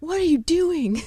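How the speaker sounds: mock shriek, very high, screaming. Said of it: "He's screaming at me".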